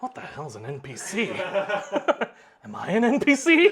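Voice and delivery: very drawn-out, slow muttering under the breath. Narrating a scene where someone passes by, Belkin muttering under his breath. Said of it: "you hear Belkin under his breath go".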